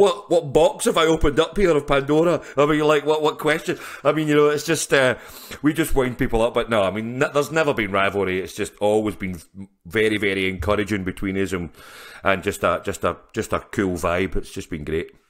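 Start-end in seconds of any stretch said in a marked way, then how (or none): 0.0-3.8 high, loud, flustered, panicked. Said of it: "they look like this".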